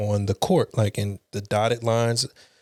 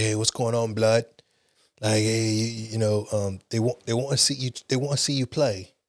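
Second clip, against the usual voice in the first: fake British accent. Retelling what a teammate said on arrival at the gym: imitating a teammate's UK accent. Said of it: "That's a pretty good interpretation".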